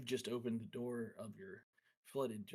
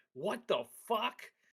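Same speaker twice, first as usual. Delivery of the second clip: very high, shrill, loud, furious dragon-like cry; 11 semitones higher, 9 dB louder than usual. Narrating an evil young dragon standing up on his hoard, pissed-off dragon. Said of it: "it really looks like he's he's pretty pissed".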